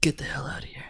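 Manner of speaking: soft whisper with laughter.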